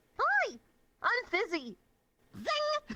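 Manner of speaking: very high, swooping pitch. Retelling greeting people as a reference to Temmie: Temmie voice. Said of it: "as a reference to, like, Temmie from Undertale".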